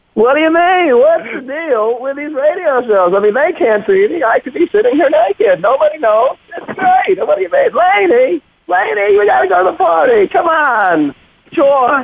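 pitch way up, comic riffing voice. Asked by the host to start with the impression: Jerry Seinfeld impression. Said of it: "you gotta start with the Jerry Seinfeld".

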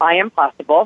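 ordinary talk, nothing marked

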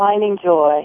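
mock joyless, unjoyful tone. Repeating how another speaker said the words: imitating a joyless tone. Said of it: "Did that sound joyous?".

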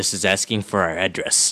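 low, soft, wary, suspicious voice.

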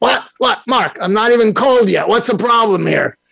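put-on Brooklyn accent. Retelling Larry answering the speaker's call, in Larry's Brooklyn voice. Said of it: "in his Brooklyn voice said".

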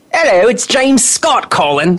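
badly faked English accent, high pitch. Pretend to be James Scott calling in to the show, in a bad fake-accent James Scott impression. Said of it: "I can fake an accent".

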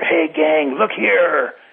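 slow, loud stage whisper. Retelling what someone said to the gang before the guards were around, loud whisper. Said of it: "said in a loud whisper".

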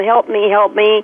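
normal talking voice

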